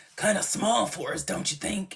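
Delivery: put-on low superhero voice. Retelling what Prue said in the episode: Prue sounding like Batman. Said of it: "I make Prue sound like Batman".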